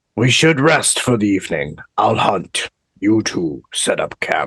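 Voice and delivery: ominous, menacing, threatening delivery. A character speaks to two companions, menacing. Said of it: "That was so menacing".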